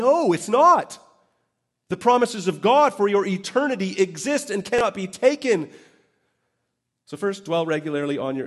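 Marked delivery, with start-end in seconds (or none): 0.0-5.7 fired-up, loud, high-pitched shouting. Addressing the audience mid-talk before noticing and apologizing, shouting. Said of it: "Why am I shouting?".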